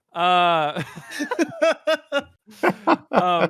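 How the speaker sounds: loud, giggling, laughing through the words.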